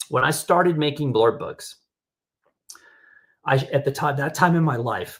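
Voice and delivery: voice catching, choking up mid-sentence. Explaining when they started making blurred books, choking up. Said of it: "I'm choking up".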